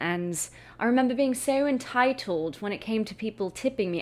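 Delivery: British lilt, pitched a bit high. Recalling being entitled about tips while serving, in a british accent. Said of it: "I don't know why I went into a British accent just then".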